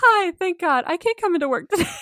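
high, loud burst of relief. Retelling calling in to a coworker: imitating own relieved voice. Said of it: "you could hear the relief in my voice".

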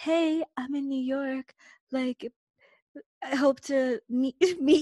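slow, high, put-on seductive flirting voice. Retelling what her friend told her to message him: put-on seductive voice. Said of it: "Is that your seductive voice? Your come hither, your flirty voice?".

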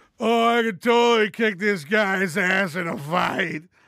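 loud, put-on drunk guy voice. The speaker acts out a personal favorite reaction: imitating a drunk guy. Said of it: "let me try to get my best drunk guy voice on it".

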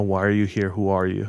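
ordinary talk

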